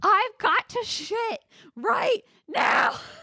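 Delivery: put-on very high, very slow, drawn-out yelling. Retelling a customer who wanted the bathroom: imitating a man screaming. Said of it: "he's just starts screaming".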